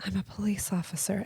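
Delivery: very quiet, hushed, low-key voice. Retelling what a girl at the nail salon answered: imitating someone speaking very quietly. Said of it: "she very quietly says".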